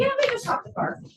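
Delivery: nonchalant, offhand, high-pitched delivery.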